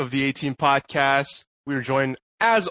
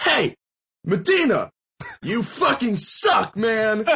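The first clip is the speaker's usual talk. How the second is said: put-on drunk man's ranting voice, higher; 8 semitones higher than usual. Retelling how a drunk man insulted a stranger: imitating drunk Ben ranting. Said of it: "maybe a little intoxicated".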